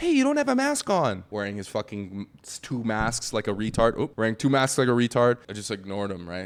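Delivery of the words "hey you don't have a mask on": very high, pitched-up voice. Retelling a stranger on an escalator pointing out no mask: imitating how a stranger sounded. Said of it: "he sounded more like this".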